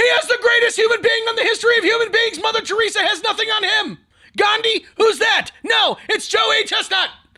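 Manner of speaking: put-on screaming announcer voice. Describing a hot-dog contest announcer, retelling an announcer's scream. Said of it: "he's screaming into this microphone".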